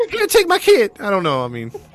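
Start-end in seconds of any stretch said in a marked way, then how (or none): 0.1-0.9 very high, loud, shrill female voice. Retrying an imitation of the mother handing away her child: imitating the mother in female voice. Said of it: "I can't do a female voice like that".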